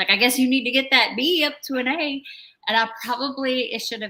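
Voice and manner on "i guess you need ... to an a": playful, teasing tone, voice raised. Speaker recalling what they said about his one B grade: retelling a tease. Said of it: "I teased him".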